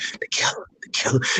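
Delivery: hushed whisper. Retelling what a guy walking past said after your performance, whispering. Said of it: "just whispered".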